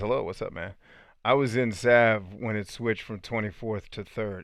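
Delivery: ordinary talk, nothing marked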